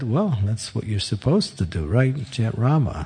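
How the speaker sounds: plain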